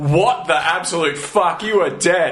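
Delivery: ordinary talk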